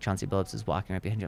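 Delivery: play-acted, very quiet, cool, offhand tone. Retelling how a buddy said a star was behind him: imitating a buddy playing it cool. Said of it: "Why are you saying it like this?".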